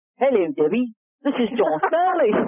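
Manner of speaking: put-on Australian accent. Act out John Stanley introducing himself to Debbie on the phone, in John Stanley's Australian accent. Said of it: "And I risked that accent".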